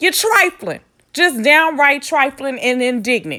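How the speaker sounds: angry, openly pissed-off tone. Scolding people who posted fake GoFundMe pages about a death: angry. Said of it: "I'm a little pissed off".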